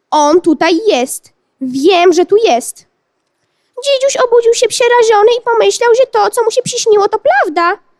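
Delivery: high, chirping, fake baby-talk voice. A woman mocks the boy's claim to his face, in a fake baby-talk voice. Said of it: "udając dziecięce szczebiotanie".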